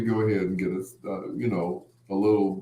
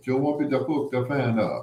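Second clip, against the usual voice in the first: put-on Jamaican accent; 3 semitones higher than usual. Quoting a woman offering to hook up the fan; Jamaican accent. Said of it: "She had a Jamaican accent".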